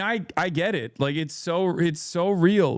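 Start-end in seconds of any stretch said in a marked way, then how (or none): none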